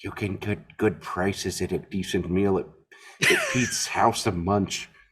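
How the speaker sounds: soft, hushed, barely voiced whisper. Retelling a Family Guy scene where Peter Griffin lies in bed: Peter Griffin whisper. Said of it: "he whispers".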